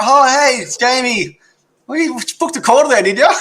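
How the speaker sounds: put-on high, bumbling, befuddled, confused old-man voice. Playing a scripted role on a booked call: confused old man voice. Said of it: "I'm the confused old man".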